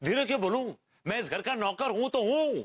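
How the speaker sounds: shouting defiantly.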